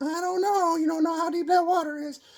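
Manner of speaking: very high, fretting, worried motherly voice. Explaining the superego, speaker voices the inner mom in your head: inner mom voice. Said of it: "That's your inner mom voice in your head saying".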